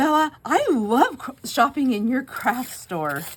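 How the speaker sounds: put-on high, loud, slow excited kid voice.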